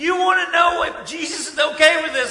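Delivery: high, loud, exasperated tone.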